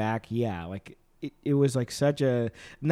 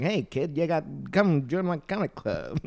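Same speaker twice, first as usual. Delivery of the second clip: put-on slow, drawn-out New York accent. Imagining a New York City guy recruiting a kid: New York City guy voice. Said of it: "a New York City guy would be like".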